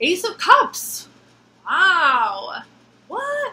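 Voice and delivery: astonished, high, swooping, long-drawn-out "wow". Reacting to a drawn tarot card: surprised. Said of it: "I don't know why I sounded surprised".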